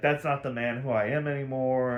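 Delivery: ordinary talk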